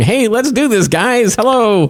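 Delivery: high, slow, drawn-out, straining to sound cool. Imagining Mark Zuckerberg trying to be cool with kids: imitating Mark Zuckerberg. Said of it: "Mark Zuckerberg coming out and going".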